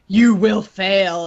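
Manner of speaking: big, loud, booming voice. Describing a voice they randomly hear while playing a game, big loud voice. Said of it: "in this, like, big, loud voice".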